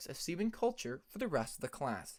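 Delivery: ordinary delivery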